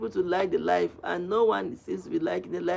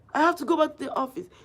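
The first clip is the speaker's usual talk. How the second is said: man's high, raised shout; 9 semitones higher than usual. Retelling a man at the market yelling at a pregnant woman: imitating a man shouting. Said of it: "He was shouting".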